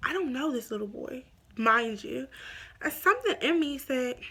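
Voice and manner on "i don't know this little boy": ordinary talk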